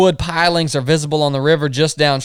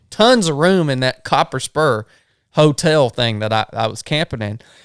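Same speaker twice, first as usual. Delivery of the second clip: plain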